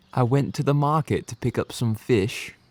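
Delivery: soft, put-on English accent, carefully attempted. Asked by a partner to say the phrase again, in an english accent. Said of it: "give him the phrase in your English accent".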